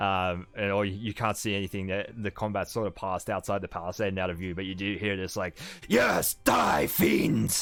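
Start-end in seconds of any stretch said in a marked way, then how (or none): 5.9-7.6 gravelly, rough roar, loud and high. Narrating a fight heard from outside the palisade, in a gravelly Streak Knight voice. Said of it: "the gravelly voice of that Streak Knight".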